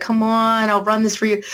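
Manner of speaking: play-acted coaxing, begging, pleading tone. Retelling how the husband asked to run the game: imitating Zippy begging. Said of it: "he kinda begged me. He's like".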